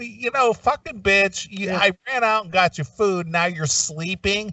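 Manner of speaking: angry male griping. Acting out a man who returns with food to find her asleep: imitating an angry man. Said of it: "And he's pissed".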